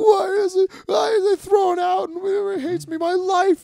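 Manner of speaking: acted, drawn-out, very high, slow weeping. Retelling own words curled up in a car back seat: imitating own crying. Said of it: "just start crying. Like".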